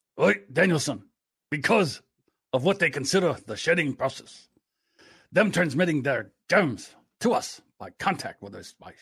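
put-on Japanese mentor accent. Trying the shedding-process bit again as a Mr. Miyagi impression. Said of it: "We do Mr. Miyagi".

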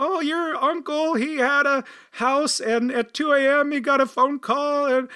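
put-on elderly woman voice, pitched way up. Playing an aunt telling family news: old lady's voice. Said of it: "I'm kind of using a old person voice, I guess, an old lady's voice".

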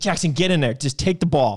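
loud, mock sideline-style yelling. Retelling coaching a kid from the sideline: retelling a yell to a kid. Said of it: "I'm yelling".

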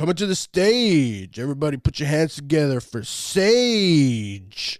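strip club DJ announcer call, "Sage" drawn out. Asked for a stripper intro, a friend announces Sage as a strip club DJ. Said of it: "You got to get a stripper intro".

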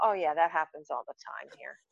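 mock casual, unbothered, offhand delivery. Retelling the house owner's reply about the tv: imitating a nonchalant tone. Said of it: "Very nonchalant".

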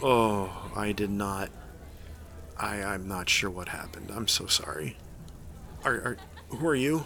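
woozy, soft, groggy, half-conscious confused voice. A kid revived with smelling salts asks who you are, groggily coming to. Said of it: "he comes to groggily".

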